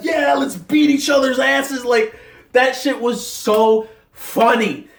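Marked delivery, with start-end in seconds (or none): 0.0-1.8 excited crowd shouting. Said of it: "and everybody's like".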